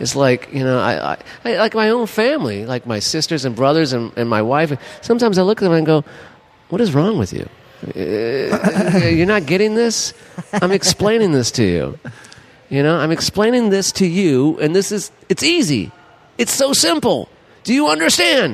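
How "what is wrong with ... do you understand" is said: exasperated ranting, voice swooping up and down. Retelling what he says to his family, sounding like Larry David. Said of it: "Now you sound like Larry David".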